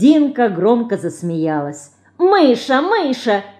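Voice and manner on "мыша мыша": high, taunting, teasing mocking mimicry. Narrator reads Dinka nudging and teasing her sister; mocking imitation. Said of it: "передразнила она".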